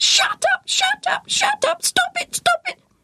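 shrill, very high, squawking parrot screech. Narrating a story where a parrot perched on Zared's head screeches: screeching parrot. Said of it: "he screeched".

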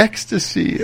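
high-pitched whispered voice full of ecstasy.

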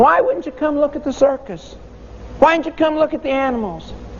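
put-on high-pitched, puzzled children's voice.

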